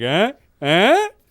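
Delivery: suggestive nudging tone. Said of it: "him just being like".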